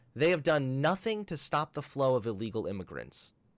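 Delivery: ordinary delivery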